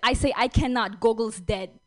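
mock Russian woman accent. Retelling to an audience what a newly arrived woman replied in a story, using a put-on Russian woman accent. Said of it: "It's a Russian woman who just moved".

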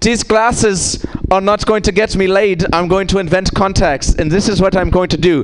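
put-on Dutch accent. Comic retells what a Dutch man who invented contacts said, in a Dutch accent. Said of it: "try and do my Dutch accent".

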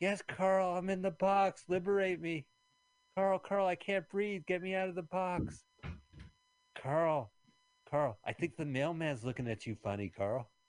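eerie, high-pitched ventriloquist dummy voice. Answering as the ventriloquist dummy after being asked if it is there, creepy ventriloquist dummy voice. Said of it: "Ventriloquist dummy, are you here?".

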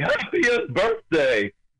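high-pitched, swooping character voice. Explaining where a cartoon voice came from: Ed Wynn voice. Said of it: "he played the Mad Hatter".

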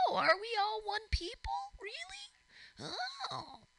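very high-pitched, slow, drawn-out creature voice. Speaker mocking people mid-rant, in a Skeksis voice. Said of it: "It's a Skeksy voice".

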